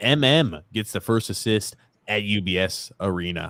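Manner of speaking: ordinary talk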